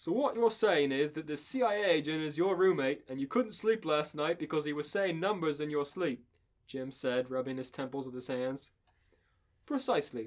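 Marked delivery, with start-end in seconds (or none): 0.0-6.2 put-on Australian accent. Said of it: "how to do an Australian accent".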